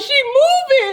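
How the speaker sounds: high-pitched screamed cry. Retelling screaming at hospital staff that her loved one was moving: retelling her own screaming. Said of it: "I'm sitting here screaming at them like".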